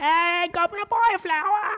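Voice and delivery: very high, pitched way up, pure Cockney street cry. Explaining accents, the speaker quotes My Fair Lady as a Cockney Eliza Doolittle impression. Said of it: "you know what neighborhood in London she's from".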